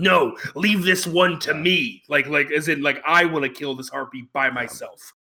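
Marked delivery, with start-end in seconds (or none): 0.0-2.0 put-on slow, deliberate, very angry voice. Recounting a scene, the speaker acts out a character's reply, retelling a very angry line. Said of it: "in a very angry voice".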